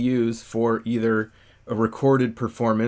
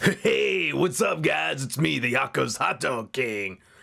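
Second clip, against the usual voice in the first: slow, drawn-out, rough and creaky character voice; 4 semitones higher than usual. Trying out voices in the office to find the character's sound: Hot Dog King character voice, first try. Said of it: "talk to myself in different ways to try and figure out what the character is going to sound".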